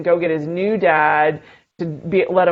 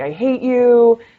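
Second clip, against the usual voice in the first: put-on pitched-up, screaming child voice; 6 semitones higher, 4 dB louder than usual. A parent retells the child screaming after being told no video games: imitating Max screaming. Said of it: "was like screaming at me".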